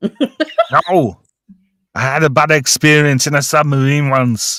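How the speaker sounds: fake stock German accent. Retelling a scene, voicing the character who answers Rico, put-on German accent. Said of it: "I can only do one kind of German accent".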